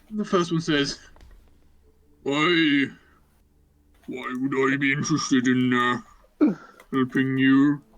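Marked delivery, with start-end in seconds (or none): 2.2-7.7 put-on ogre voice, slower. Game narrator voicing the first ogre blocking the entrance, in an ogre voice. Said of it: "My famous ogre impression".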